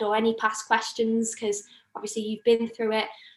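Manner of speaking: ordinary talk, nothing marked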